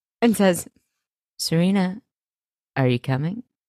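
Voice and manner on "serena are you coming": put-on slithery, mournful, petty, snaky sad delivery. Retelling a TV scene, imitating Aaron Tveit's snaky, sad delivery. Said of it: "in the weirdest, snakiest, saddest way".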